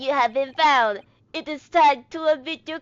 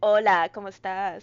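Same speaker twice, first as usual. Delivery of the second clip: put-on Puerto Rican detective voice, lower; 5 semitones lower than usual. Joking that Sholmes speaks Spanish randomly: Puerto Rican Sholmes voice. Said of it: "He's like".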